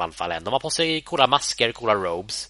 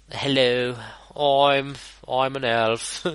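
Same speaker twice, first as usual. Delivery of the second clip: put-on cockney elf voice, higher pitch; 4 semitones higher than usual. Describing how elves talk in the games, the speaker imitates one in a cockney elf voice. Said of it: "Dark Elves är väldigt så här cockney".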